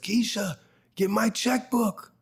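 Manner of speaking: shrill, very high yell. Retelling what the studio owner yelled on seeing the scene: imitating James yelling. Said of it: "and he yells".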